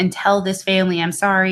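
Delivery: normal talking voice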